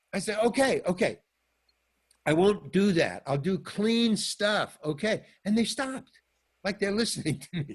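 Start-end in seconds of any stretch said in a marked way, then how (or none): 0.4-5.2 slow, drawn-out hollering yell. Retelling how he yelled a promise to the crowd: imitating his own yelling. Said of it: "I'm yelling at them".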